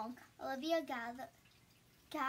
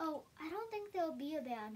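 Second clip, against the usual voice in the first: plain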